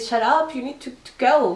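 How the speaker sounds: mock fed-up, angry yelling telling-off. Recounting a woman who got mad during filming, retelling her angry yelling. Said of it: "She just started yelling at them and say".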